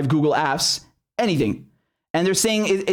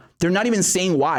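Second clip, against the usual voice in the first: ordinary delivery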